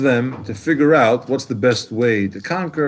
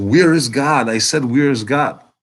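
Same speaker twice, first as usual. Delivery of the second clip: put-on sterner, demanding shout. Telling a story, the speaker acts out the rabbi, imitating the rabbi shouting. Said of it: "he shouts".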